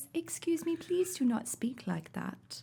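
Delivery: high, soft, slow, prim royal princess voice. Showing how a princess calmly scolds someone: princess accent, like royalty. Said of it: "the princess accent, like if I was royal".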